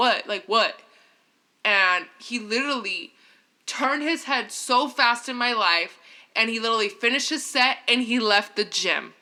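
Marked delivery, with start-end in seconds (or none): 0.0-0.8 put-on angry, mad cussing outburst. Retelling confronting a man staring at her in the gym: imitating her own angry outburst. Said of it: "I was hella mad".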